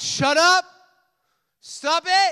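acted loud shouting. Speaker acts out the voices shouting at a man in the story: retelling a loud shout. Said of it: "The voices were loud".

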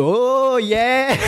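high, whooping street-style cheer.

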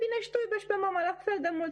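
high, fast, frightened speech.

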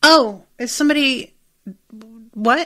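mildly puzzled, unbothered, slow and mild tone. Showing the mildness of Fleabag's reaction: mild puzzled reaction imitating Fleabag. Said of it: "It's more just like".

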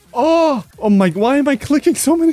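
anxious, on edge. Player mid-game trying not to die, nervous. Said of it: "I'm so nervous right now".

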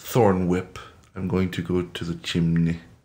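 low, put-on German-accented character voice. Player answering what they do next, in a German accent. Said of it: "Why are you German now?".

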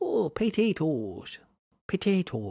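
half-mastered, high, swooping attempted Irish accent. Speaker has another go at saying potatoes, in an attempted irish accent. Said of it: "I never really did master how to say that in the Irish accent".

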